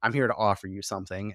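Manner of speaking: ordinary delivery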